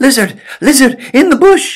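breathless calling out, very high and very loud. Narrator reads the hero calling to the lizard: out of breath, calling out. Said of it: "Out of breath".

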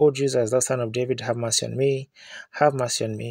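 ordinary talk

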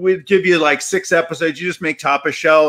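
ordinary delivery

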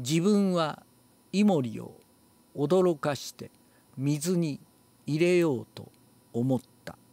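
broken into separate little chunks, halting. Commenting on how a sentence is read: choppy, broken into separate phrases. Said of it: "バラバラになってますね。".

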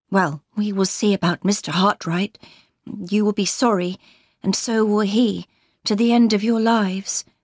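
ordinary delivery

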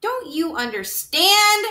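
shrill, loud shouted outburst. Lester retorts to Antoinette about the Mouse Council, shouting. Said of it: "shouted Lester".

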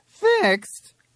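very high voice, breaking and cracking. A patient hearing his doctor's worst-case answer about therapy, voice cracking. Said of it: "his voice cracking".

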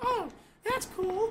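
put-on made-up girl voice, very high-pitched and slow.

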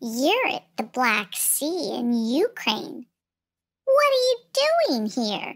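slippery, slithery, small lizard voice. Narrating a story, a little lizard answers a girl in a slithery little voice. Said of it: "A slithery little voice replied".

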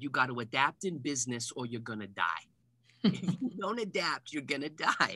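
put-on broad New York accent, laid on thick. Retelling what a sporting goods store owner said: thick New York accent. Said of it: "he had this thick New York accent".

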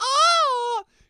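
long, very high, shrill, loud cry of pleasure. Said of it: "loudly does it again".

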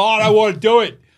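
shrill, very high, very loud outcry. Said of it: "They're just like".

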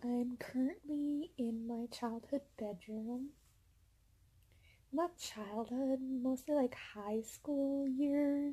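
talking very quietly. Talking quietly in a bedroom because parents are downstairs: talking very quietly. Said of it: "I'm talking very quiet".

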